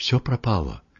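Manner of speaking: ordinary delivery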